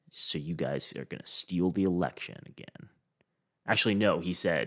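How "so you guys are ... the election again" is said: put-on muttered remark. Retelling what a man said to an election volunteer, imitating a mutter. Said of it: "he mutters".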